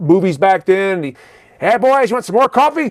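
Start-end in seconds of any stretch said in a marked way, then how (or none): 1.6-2.9 put-on smart-alecky, raised-pitch old-movie 1940s street-talker voice. Retelling how an old cafe owner kept talking: imitating a 1940s movie street talker. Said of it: "reminding me of some motherfucker from nineteen forties talking on the street".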